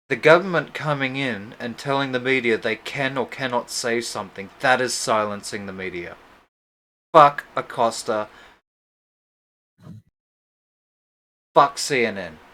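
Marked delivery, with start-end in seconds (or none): 7.1-12.3 loud, slow, forceful, vigorous, passionate delivery. Arguing about a press conference with another speaker, saying it with vigor and passion. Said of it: "you say it with so much fucking vigor".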